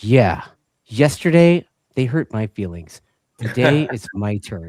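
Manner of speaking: put-on very loud, utterly earnest, dead-serious kid voice. Retelling a little girl's reply before her race: imitating a dead-serious little girl. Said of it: "with the most serious look on her face".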